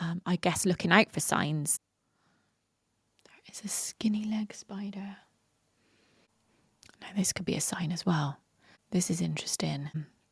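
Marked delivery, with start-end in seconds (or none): 3.3-9.9 soft, hushed whisper, barely voiced. Talking about signs, the speaker spots a spider and starts whispering. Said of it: "I don't know why I'm whispering".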